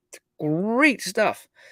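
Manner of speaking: tongue-in-cheek fake approval. Commenting on a news article about dangers of digital currencies: sarcastic. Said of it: "I'm being sarcastic".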